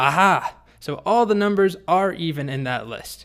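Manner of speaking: put-on slow, high, victorious, triumphant tone. Telling a story, voicing a boy who outwits the dragon: triumphant. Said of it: "Martin triumphantly says".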